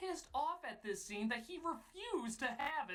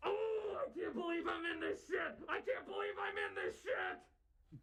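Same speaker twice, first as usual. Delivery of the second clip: put-on mild scream, high-pitched, like a mild yell; 5 semitones higher than usual. Imagining him going home after every shoot, imitating screaming into a pillow. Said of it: "shoot and screaming into his pillow".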